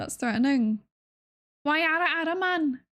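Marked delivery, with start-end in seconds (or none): 1.6-2.8 put-on Scouse accent creeping in, pitched up. Trying the ara ara line again in an accent: scouse accent. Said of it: "that turned a bit more scouse".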